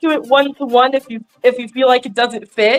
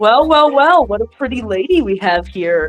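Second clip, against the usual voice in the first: play-acted cocky, smug, flirty tone. Imagining a stranger turning around after a bump, imitating a smirking flirt. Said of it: "smirks and goes like".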